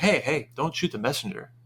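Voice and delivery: plain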